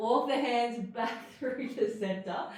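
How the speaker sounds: speech broken by a slipping laugh.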